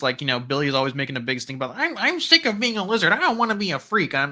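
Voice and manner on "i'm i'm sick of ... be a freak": put-on high ten-year-old child voice. Quoting a character who complains about being a lizard: Normie ten-year-old voice. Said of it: "trying to do my best Normie ten-year-old voice, but I'm failing".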